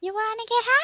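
high put-on cartoon voice. Trading impressions in a group, doing a Towelie voice. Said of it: "I can do Towley".

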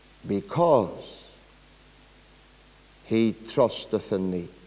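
very slow, drawn-out, deliberate reading.

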